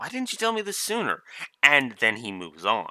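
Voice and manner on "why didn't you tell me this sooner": high, fast, throwaway offhand delivery. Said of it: "just a quick little".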